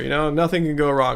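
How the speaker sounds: plain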